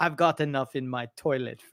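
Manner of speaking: soft, put-on sultan voice. Joking about what a Saudi prince said, doing a put-on sultan voice. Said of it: "that's my sultan voice".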